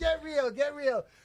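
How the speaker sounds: acted insistent repeated shouting. Telling a story about people who kept screaming at him, retelling people screaming. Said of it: "they're screaming at me".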